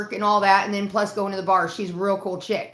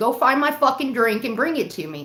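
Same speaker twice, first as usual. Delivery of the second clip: play-acted sassy, bossy voice full of attitude; 3 semitones higher than usual. Retelling own past words to someone, retelling with attitude. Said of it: "I did get an attitude".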